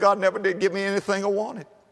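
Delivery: words tripping over each other. Telling a story of a preacher at his alma mater, imitating tongue-tied speech. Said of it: "in his tongue-tied way".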